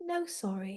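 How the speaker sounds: gentle, hushed, very quiet and soft voice. Speaker recalling a man beside him after each dropped ball, retelling a gentle 'No, sorry'. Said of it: "Just really gently like that".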